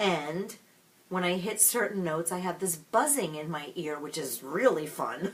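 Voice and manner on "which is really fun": heavy, very sarcastic throwaway tone. Describing a buzzing in the ear when hitting notes: very sarcastic. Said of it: "I say that very sarcastically".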